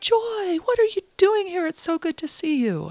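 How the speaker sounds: play-acted, very high, loud, swooping yell. Retelling how a director called out in a public waiting room: imitating someone yelling out. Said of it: "who yells out".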